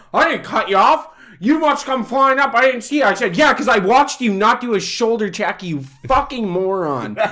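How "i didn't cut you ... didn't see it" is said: mock heated, high, angry, worked-up defensive rant. Speaker retells a driver confronting them at work, imitating his angry rant. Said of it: "he comes over losing his shit".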